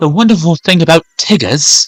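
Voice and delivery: put-on English accent, R dropped. Imitating how English people say R's, in an English accent with dropped R's. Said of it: "English people don't know how to pronounce R's. So they would say".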